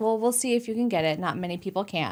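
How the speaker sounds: normal talking voice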